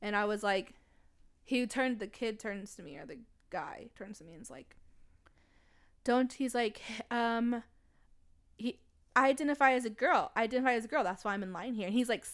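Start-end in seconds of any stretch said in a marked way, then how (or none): none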